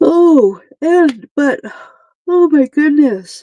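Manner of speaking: slow, high words stretched by a yawn. Speaker breaks off mid-talk and yawns before apologizing, yawning. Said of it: "Sorry about the yawning".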